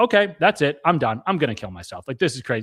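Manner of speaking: frantic, overwhelmed outburst. Retelling popping out of a vision in the cabin: retelling being beside himself. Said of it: "I'm completely beside myself".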